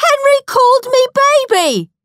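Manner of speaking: very shrill, very high shriek. Narrator reading a child telling on another child to Mum, shrieking. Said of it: "shrieked Peter".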